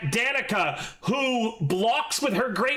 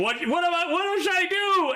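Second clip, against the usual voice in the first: yelled out, voice raised and high-pitched; 7 semitones higher than usual. Voicing a character who charges at a vampire, yelling. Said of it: "as he's yelling".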